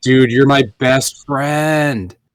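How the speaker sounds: put-on drunk man's speech. Speaker recalls drunk people from college, imitating a drunk guy. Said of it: "one dude was like".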